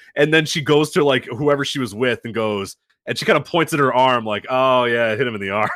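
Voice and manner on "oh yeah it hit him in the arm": deflated, disappointed, let-down tone. Retelling how a fan reacted to a replay: imitating a disappointed fan. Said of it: "you feel the disappointment in her".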